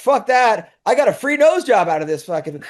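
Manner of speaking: put-on bubbly, delighted, thrilled excitement. Retelling how a friend answered about her nose: imitating someone excited. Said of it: "she's all excited".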